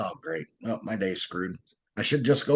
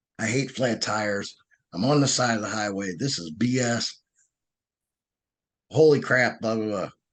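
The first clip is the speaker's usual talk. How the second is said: plain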